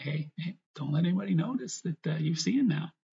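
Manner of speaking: put-on smirking, playful twinkle-in-the-eye tease. Interpreting a Bible passage and voicing a quoted line; acting out a smirking tone. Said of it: "He says it with a little bit of a smirk".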